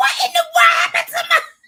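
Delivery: very high, loud, shocked shrieking scream. Retelling their own reaction when they first saw what happened: retelling a shocked scream. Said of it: "but I was screaming".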